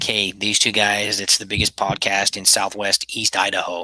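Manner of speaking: ordinary talk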